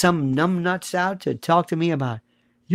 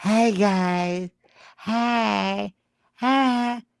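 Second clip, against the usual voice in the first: very slow, drawn-out, mousy, giggly voice; 3 semitones higher, 4 dB quieter than usual. Mocking a widow's greeting to viewers: imitating a mousy, giggly voice. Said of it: "mousy, laughing, giggly, rictus".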